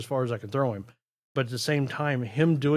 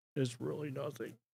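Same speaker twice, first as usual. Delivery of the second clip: very quiet, hushed put-on voice; 12 dB quieter than usual. Speaker notes using the voice, then repeats a line: Bill Clinton voice. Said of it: "Notice I'm using the Bill Clinton voice".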